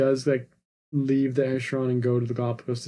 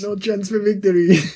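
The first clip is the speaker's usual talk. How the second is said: absurd, silly, loud, put-on French accent; 8 semitones higher, 8 dB louder than usual. Quoting a line from a movie scene to a co-host, in a silly french accent. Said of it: "such a silly accent".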